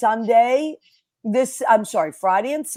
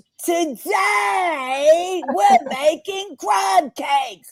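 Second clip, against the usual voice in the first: put-on very high, very slow, eager, excited kid-host voice; 9 semitones higher than usual. Retelling a line from a favorite kid cooking video: imitating Carter, excited British kid. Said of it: "And he goes".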